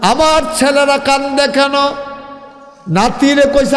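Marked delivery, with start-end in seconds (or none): 0.0-1.7 stern, scolding voice, pitched high. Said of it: "খুব ধমক দিতেন".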